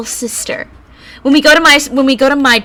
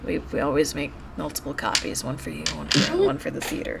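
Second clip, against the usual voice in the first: barely audible, hushed, whispered muttering; 9 semitones lower, 14 dB quieter than usual. Retelling what a woman said, imitating her muttering. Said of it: "she kind of she mutters like".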